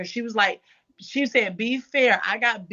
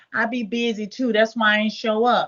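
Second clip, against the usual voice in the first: play-acted begging tone, pleading and defensive. Retelling what a woman said after being cut off, imitating her pleading. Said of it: "She was just basically pleading".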